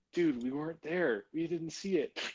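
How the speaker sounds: soft whispered voice. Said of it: "Nisbet's response is gonna be like".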